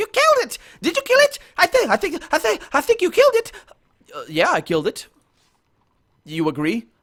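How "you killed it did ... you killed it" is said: very high, fast, squeaky gnome chatter. Narrator voices a small gnome talking to the players, in high-pitched chatter. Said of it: "begins to chatter in high uh, high pitched voice".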